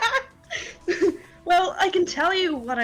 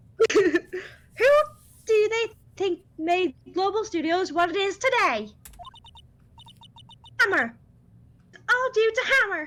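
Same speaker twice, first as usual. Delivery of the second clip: weird, odd put-on old lady voice; 3 semitones higher than usual. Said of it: "My old lady voice is fucking weird".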